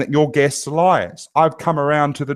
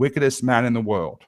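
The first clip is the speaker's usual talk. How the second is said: normal talking voice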